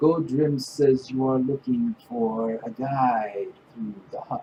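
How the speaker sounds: hollow, echoey, enclosed voice, as inside helmet. Narrating a scene where a character speaks to the listeners, voice echoing inside helmet. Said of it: "His voice is very weird sounding, kind of like it's echoing back and forth inside of his helmet".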